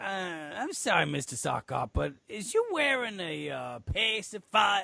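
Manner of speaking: put-on Southern accent. Retelling a story, the speaker quotes the judge in a southern voice. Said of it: "that was my southern accent".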